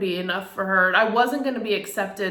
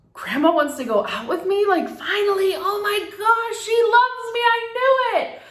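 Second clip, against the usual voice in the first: put-on high, giddy, thrilled little-girl squeal. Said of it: "I was so, like".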